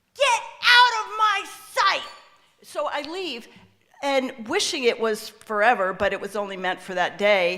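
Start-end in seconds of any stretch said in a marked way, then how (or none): 0.2-2.1 high, loud, furious shouting at the top of lungs. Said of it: "shouts at the top of his lungs".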